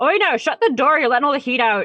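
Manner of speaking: very high, shrill, fast hollering. The game master voices the barkeep yelling at a player in the tavern doorway: Margin the barkeep yelling. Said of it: "she's kind of yelling at you".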